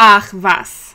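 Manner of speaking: sarcastic tone. Demonstrating a german phrase in a sample exchange about a messy room, sarcastic. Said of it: "it's usually used sarcastically".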